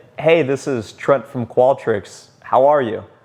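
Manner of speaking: slow, even-keeled, flat, level, unhurried monotone. A salesperson demonstrates how they open a sales call: slow monotone voice. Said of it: "I almost talk with a more monotone voice, I slow it down".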